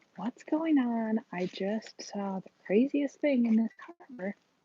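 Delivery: in a whisper. Greeting everyone on Wednesday Walks from inside a car: whispering. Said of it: "I'm whispering".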